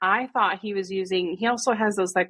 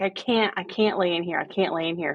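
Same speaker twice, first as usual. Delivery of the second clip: imitated hysterical, frantic voice. Retelling the kid refusing to stay in his room: imitating hysterical pleading. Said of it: "he was hysterical".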